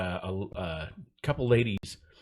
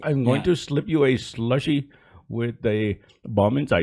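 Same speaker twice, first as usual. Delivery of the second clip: booming, loud, slow, drawn-out put-on Indian accent; 4 semitones higher, 9 dB louder than usual. Showing the accent always used when trying a terrorist voice: put-on Indian accent. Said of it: "I always do an Indian".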